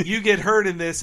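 plain

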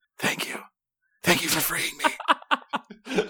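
hushed, soft, breathy, barely voiced whisper. Reading a gamebook aloud, a freed fighter thanks the rescuer: whispering. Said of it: "and whispers".

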